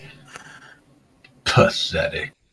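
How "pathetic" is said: soft, unvoiced, disdainful whisper with contempt. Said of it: "You hear in your mind".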